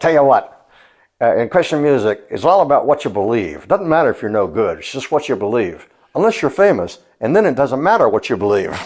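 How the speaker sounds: put-on New York accent. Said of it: "Mark put on like a New York accent".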